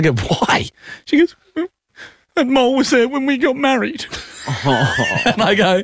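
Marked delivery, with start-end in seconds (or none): 2.3-4.1 acted emotional delivery, voice very high-pitched. Retelling what his wife said on seeing the mole, imitating someone getting emotional. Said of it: "I'm just getting emotional about that".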